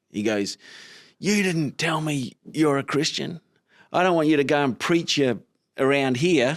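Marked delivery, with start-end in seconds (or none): 1.1-6.5 mock confrontational, high, angry yelling. Retelling the man he worked for confronting him on a job site, imitating someone yelling. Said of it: "he just came up to me like yelling".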